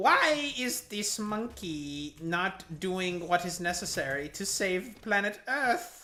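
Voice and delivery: high-pitched, bad villain voice. Speaker voicing what Ada is thinking, in Frieza voice. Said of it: "in the Frieza voice".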